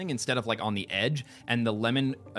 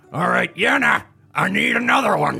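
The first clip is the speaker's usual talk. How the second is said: very loud, gravelly, rough, gruff man's bark; 9 semitones higher, 10 dB louder than usual. Telling a story, the speaker quotes a man they heard, in a gruff man's voice. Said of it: "this very like gruff man just say".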